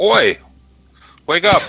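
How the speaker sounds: very loud, piercing, shrill high-pitched yell. A player's character wakes a figure lying on a cot, yelling. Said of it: "as you yell out".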